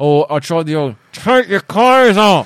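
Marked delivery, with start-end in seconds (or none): 1.1-2.5 mock angry, raised voice through clenched teeth. Retelling a line you once tried on her, retelling it through clenched teeth. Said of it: "through clenched teeth, angrily".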